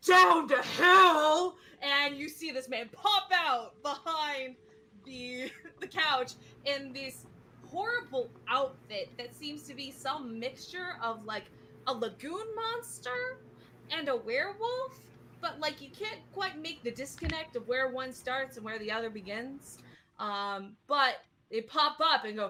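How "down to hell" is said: slow, loud, high, badly auto-tuned shout. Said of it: "really terrible, like, auto-tuned voice that goes".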